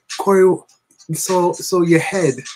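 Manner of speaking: tender, gentle, unhurried voice, high and slow. Retelling what a woman would say to Corey, imitating her soft voice. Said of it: "she would speak to me so softly".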